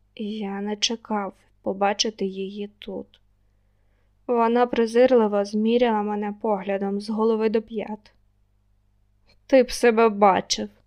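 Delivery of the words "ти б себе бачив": contemptuous, scornful, louder. Lilya looks the narrator up and down and speaks to him, contemptuous. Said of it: "зневажливо сказала вона".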